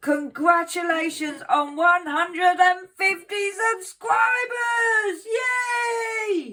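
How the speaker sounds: put-on excited cheer, very high, loud, very slow. Acting out how someone might sound congratulating, mock-excited Sharon voice. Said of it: "this is how I imagine Sharon sounds".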